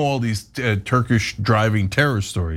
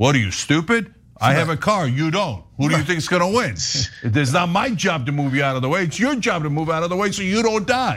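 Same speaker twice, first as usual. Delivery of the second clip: put-on Turkish accent sliding into New York accent; 4 semitones higher than usual. Retelling what drivers say to pedestrians, in an attempted Turkish accent. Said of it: "That's a great Turkish accent".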